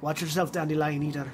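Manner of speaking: put-on Irish-accented speech.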